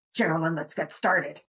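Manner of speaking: put-on frustrated, agitated, low tone. Giving a hypothetical example of a co-host starting a podcast, mock-agitated. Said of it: "in like a kind of agitated voice".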